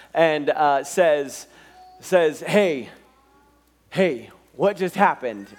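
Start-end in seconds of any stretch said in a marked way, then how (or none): 2.4-5.3 put-on super excited voice. Retelling a tv scene where he got right: imitating someone super excited. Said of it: "got super excited".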